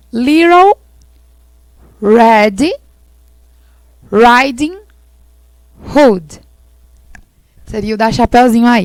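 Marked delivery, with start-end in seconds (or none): 0.1-6.4 drawn out word by word, very slow, deliberate. Giving a story's english name so listeners remember it, said slowly to be remembered. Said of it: "eu vou falar devagarzinho para que vocês possam lembrar o nome dele".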